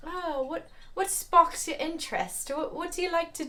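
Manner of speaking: put-on butchered British accent, very high pitched. Retelling what a guy asked, the speaker uses a bad british accent. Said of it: "I'm really bad at accents, so I'm just gonna really butcher it".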